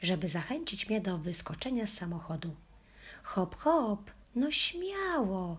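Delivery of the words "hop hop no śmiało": very slow, high, swooping, eager enthusiastic shout. Hanka coaxes the dog out of the car, shouting enthusiastically. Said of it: "krzyknęła z entuzjazmem".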